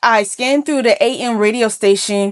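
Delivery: ordinary delivery, nothing marked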